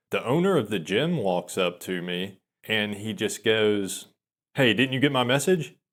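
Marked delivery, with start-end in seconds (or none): 4.5-5.7 sounding really pissed off and confronting. Retelling how the gym owner walked up to him: imitating an angry gym owner. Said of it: "he sounds really pissed off".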